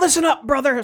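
very high-pitched wrestling-promo style holler. Describing Hulk Hogan yelling at the Gremlin in the second film: Hulk Hogan yelling. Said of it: "So he's yelling to the Gremlin".

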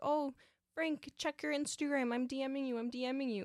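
mock scream in a woman's voice. Retelling a woman in the crowd screaming at a performer, mock-screaming. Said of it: "one woman was screaming".

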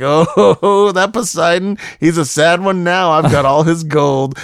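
very slow, high speech filled with laughter. Retelling a movie scene where a man shows off his shells: imitating someone laughing while talking. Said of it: "he just starts laughing like".

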